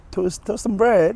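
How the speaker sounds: terrible put-on British accent, very high, loud. Asked to show their best British accent, terrible British accent. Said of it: "It's terrible".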